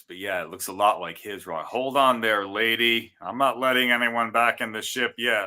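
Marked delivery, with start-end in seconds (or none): 1.7-5.5 loud, high, really bad put-on American accent. Quoting the rocket captain's line: imitating a bad American accent. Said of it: "really bad American accent".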